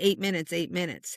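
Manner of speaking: normal talking voice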